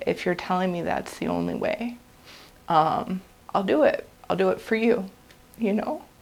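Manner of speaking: emotional, heartfelt voice with swooping pitch. Speaker recounts what they told god in prayer, getting emotional. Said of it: "Sorry, I'm getting emotional".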